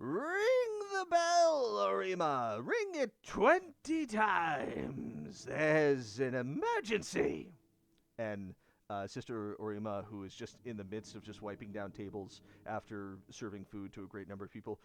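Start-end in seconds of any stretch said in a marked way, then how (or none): 0.0-7.5 loud, very slow, stretched, swooping yell. Voicing a mayor running into a temple to raise alarm: yelling in character. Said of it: "she yells".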